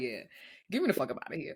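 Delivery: imitated disgusted, irritated voice. Retelling a night out when a stranger blew in their ear: retelling own disgusted reaction. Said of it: "I was so disgusted, appalled, and irritated".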